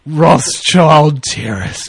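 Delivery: slow, wondering, drawn-out awed voice. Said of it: "is just like".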